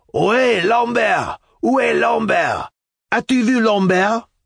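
very high, wild yelling shout. Narrator reads a man calling out from the street below: wild shout. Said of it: "We heard his wild shout".

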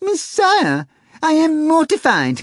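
very high, shrill, drawn-out horrified howl. The cat cries out to its chess opponent, howling in horror. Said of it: "howled the cat, an expression of horror on his face".

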